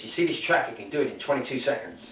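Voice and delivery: ordinary talk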